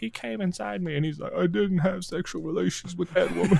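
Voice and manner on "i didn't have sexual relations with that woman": rough-edged, creaky put-on voice. Retelling the Monica Lewinsky scandal denial: Bill Clinton voice. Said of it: "You know how I could do that voice so well?".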